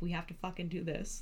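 put-on tipsy, fired-up, overexcited drunk voice. Retelling a late-night phone call from a party: imitating own drunk excitement. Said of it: "super drunk at the party".

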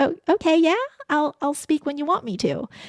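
put-on high, timid, unsure, cute little-girl voice. Act out how you were once seen and would answer others, imitating an unsure, cute little girl. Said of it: "cute little girl that was unsure and would say".

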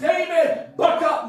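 high, fervent, shouted, self-encouraging tone.

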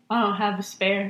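flat, deadpan delivery. Speaker reenacting their own reply to a man helping with a flat, deadpan. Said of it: "in deadpan face".

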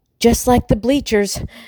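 panted line. Working her way back toward the tree trunk, she speaks, panting. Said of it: "she panted".

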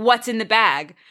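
aggressive, pointed, accusing, confrontational tone. Retelling an episode where a character confronts a woman: imitating an aggressive confrontation. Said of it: "where she's aggressive".

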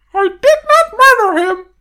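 squeaked out, high-pitched and loud. Trying a movie line as Mickey Mouse, doing a Mickey Mouse impression. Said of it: "That's the closest I think I could do to Mickey".

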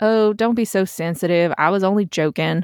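ordinary delivery, nothing marked

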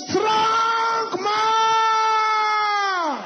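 furious shout with boiling anger.

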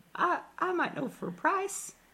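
very high, sudden falsetto, pitched way up. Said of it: "I'm going [name] now".

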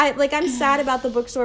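ordinary talk

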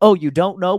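put-on condescending tone. Mimicking the other speaker's question about tattoo removal: imitating a condescending tone. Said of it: "You just sounded like you said it in a tone".

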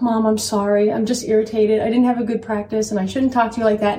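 usual speaking voice

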